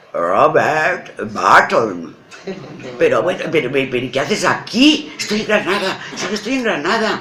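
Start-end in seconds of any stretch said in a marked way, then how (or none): 0.1-2.1 put-on Oxford English accent. Retelling asking a man his name, imitating Robert Barton's mock-serious Oxford accent. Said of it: "muy serio, acento Oxford".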